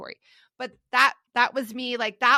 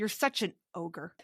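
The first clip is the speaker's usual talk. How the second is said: put-on spiteful, mean, nasty tone; 4 semitones lower, 8 dB quieter than usual. Retelling what was said to mom, imitating own nasty retort. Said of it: "with the meanest face ever".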